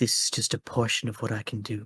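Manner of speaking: slight, faint, soft voice. Game master voices a woman speaking telepathically to a player: faint voice in your head. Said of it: "a slight voice in your head".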